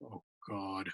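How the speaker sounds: very low, quiet mutter under the breath. Retelling a show where someone reads a poem: JR muttering under his breath. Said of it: "under his breath, he says".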